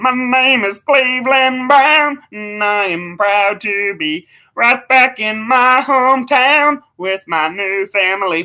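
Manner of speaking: slow, high cartoon voice, each word stretched. Showing off an impression after saying it is spot on: Cleveland Brown voice. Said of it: "my Cleveland Brown is spot on".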